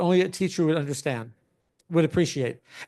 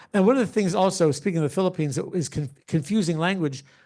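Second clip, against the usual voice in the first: ordinary talk, nothing marked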